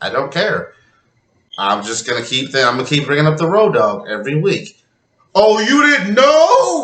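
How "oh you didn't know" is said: very high squeaky crack, drawn out on "know". Bringing up the Road Dog as you do every week, your voice cracking. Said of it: "my voice cracked".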